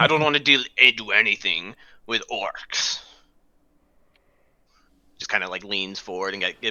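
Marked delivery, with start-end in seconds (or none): 0.0-3.0 words pushed out in a growling half-orc voice. Voicing a half-orc who hates dealing with orcs: growling half-orc voice. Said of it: "gives a bit of a growl".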